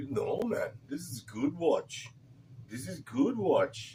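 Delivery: put-on, bad Indian English accent. Retelling what the watch repair guy told them, in a bad Indian accent. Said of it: "how's my uh, Indian bad accent?".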